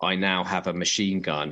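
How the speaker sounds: ordinary delivery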